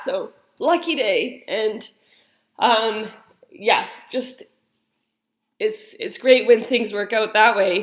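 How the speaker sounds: teary, choked-up voice on the verge of tears. Telling of someone finding their son, the speaker is crying. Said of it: "I'm crying right now".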